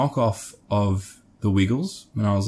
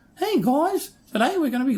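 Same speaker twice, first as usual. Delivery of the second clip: put-on Australian kids' puppet voice, higher. Recalling puppets on childhood TV shows: imitating Aussie kids' TV puppet voice. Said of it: "they always had that same Aussie".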